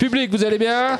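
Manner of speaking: squeaky, high-pitched voice.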